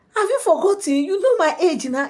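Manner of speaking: put-on surprised, girlish high voice.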